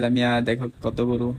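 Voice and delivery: ordinary talk, nothing marked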